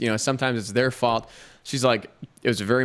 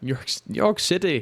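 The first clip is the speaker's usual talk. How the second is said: put-on British accent with raised pitch; 6 semitones higher than usual. Imitating a man seeing New York City for the first time, put-on British accent. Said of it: "was that your imitation of somebody from Britain".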